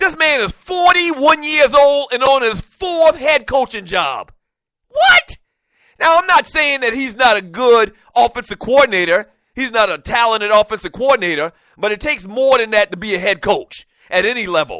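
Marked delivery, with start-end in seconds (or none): 0.0-5.4 mad, worked-up, upset, pitched-up disbelief. Complaining about a coach's fourth head coaching job, getting upset. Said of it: "I'm sorry".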